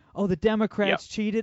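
high, loud, whiny complaining tone. Mocking a statement by Donald Trump: mocking whiny Donald Trump imitation. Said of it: "What a whiny little wuss".

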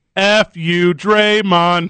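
jeering, razzing heckling yell, like a crowd. Doing an impression for others to guess: impression of a crowd heckling. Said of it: "I'm gonna do an impression of something".

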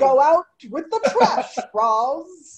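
passive-aggressive, high and slow, name drawn out. Trying a voice from the show for a line about the trash: Niles voice. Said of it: "That sounded more like Niles".

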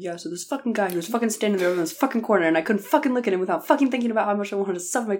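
mock crude, swearing, ranting delivery. Retelling how a podcast source kept talking: impersonating a source's crude rant. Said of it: "That was a good impersonation".

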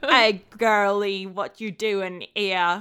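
put-on drawled poor Cockney accent. Speaker recounts a comedy bit by two comedians; Fred Armisen and Bill Hader's bad Cockney. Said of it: "going to their Cockney like".

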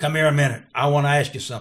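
loud, quick, raspy voice. Former official recalling Bear Bryant calling him over, in Bear Bryant's raspy voice. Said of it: "in that raspy voice would say something".

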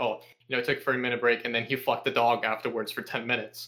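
ordinary talk, nothing marked

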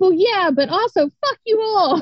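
very high, angry, sharp retorting tone. Retelling the reaction to a surprise proposal: retelling own mad reply. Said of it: "I was so mad".

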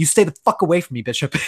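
fast, sharp, clipped speech. Retelling a film scene to another speaker: imitating Sigourney Weaver, biting and quick. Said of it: "Sigourney Weaver looks over at Bishop and is just like".

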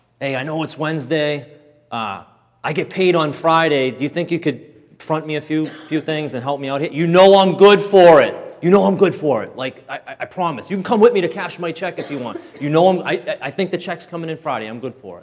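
urgent, earnest, coaxing pleading tone. Retelling how he begged a drug dealer for credit: retelling a plea to a dealer. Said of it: "pleading with my, my dealer".

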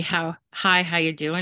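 ordinary delivery

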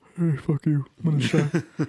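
slow, drawn-out, rude, taunting delivery. Acting out Shaq on the TV panel: Shaq impression. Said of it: "Shaq doing this".

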